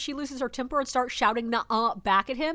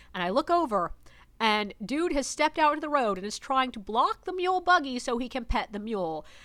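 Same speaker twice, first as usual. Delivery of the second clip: normal talking voice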